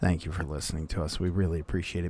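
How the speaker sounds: soft low voice. Thanking listeners at the end of the podcast, close to the mic: lowered voice. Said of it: "the reason that I'm talking down right now".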